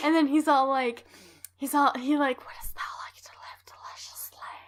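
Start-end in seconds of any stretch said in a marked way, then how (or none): 2.4-4.5 put-on whispered, breathy, seductive European accent. Quoting a man's question in a put-on sexy European accent. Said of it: "like one of the like sexy European accents".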